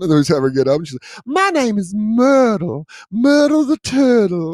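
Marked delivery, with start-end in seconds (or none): 1.3-4.5 drawn-out, very high Southern belle drawl. Giving a dog a voice, in a Southern Belle drawl. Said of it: "we give her a little Southern Belle".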